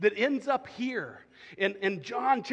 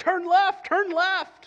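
very high, loud, insistent, drawn-out shout; 10 semitones higher, 8 dB louder than usual. Recalling a car's talking navigation voice while driving, imitating a lady shouting. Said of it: "this lady starts shouting at me".

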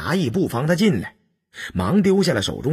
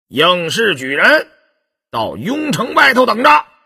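very high, loud, ringing shout; 9 semitones higher, 6 dB louder than usual. Narrator reads a voice heard from up ahead, shouting. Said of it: "便听有人喝道：".

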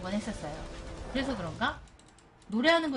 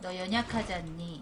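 ordinary talk, nothing marked

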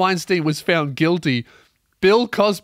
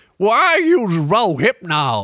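drawn-out delivery with big pitch swoops; 2 semitones higher than usual. Acting out an imagined chat between convicted men: bad Bill Cosby accent. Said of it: "I can't do a Bill Cosby accent".

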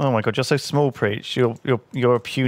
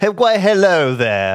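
refined polite orc voice, higher and louder; 7 semitones higher, 6 dB louder than usual. Mocking how orcs have evolved: put-on refined polite orc voice. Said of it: "they've kind of just evolved into this".

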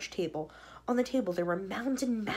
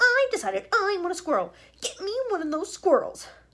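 very high, sudden, shrill, swooping shout; 10 semitones higher, 7 dB louder than usual. A child suddenly calls out to her mother, shouting. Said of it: "Shouted Verksalt suddenly".

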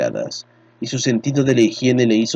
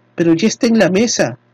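obstinate, stubborn insisting, raised pitch; 8 semitones higher, 4 dB louder than usual. Narrator reads Connie insisting to Carlo after he refuses, stubborn insistence. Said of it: "insistió Connie, testaruda".

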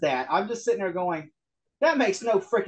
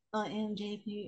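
put-on robot voice, much quieter; 2 semitones higher, 13 dB quieter than usual. Mocking how a man talks while discussing him, in a robot voice imitating JP. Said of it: "He talks like a robot".

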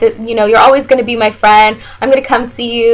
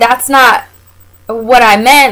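put-on, very slow, drawn-out, irritated, mad tone. Retelling an argument with him, quoting your past self: retelling getting mad. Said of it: "And then I'm getting even more mad".

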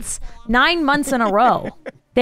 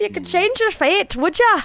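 high-pitched mock Scottish accent. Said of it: "you don't talk like that in Scotland".

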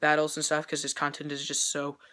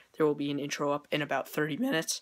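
voice cracking and breaking. Announcing an upcoming intro to viewers: voice cracking. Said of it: "Voice crack!".

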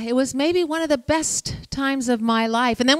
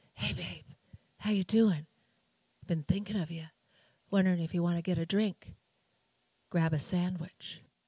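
sultry, very quiet, low sexy half-whisper; 6 semitones lower, 10 dB quieter than usual. Retelling a phone call from the same caller weeks later, in a sexy, half-whispery voice. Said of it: "It's that same sexy, whispery voice".

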